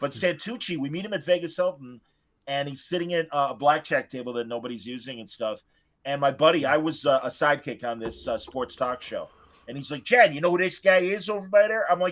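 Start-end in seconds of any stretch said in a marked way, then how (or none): 10.0-11.9 put-on, high-pitched, classic Chicago accent. Retelling a buddy pointing out a guy at Vegas: classic Chicago accent. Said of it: "that's your classic Chicago accent".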